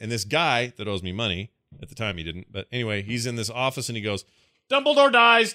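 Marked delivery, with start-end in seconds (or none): 4.7-5.6 very loud, high yell at the top of lungs. Retelling how a guy in the office spoiled a book, yelling at the top of his lungs. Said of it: "like at the top of his lungs".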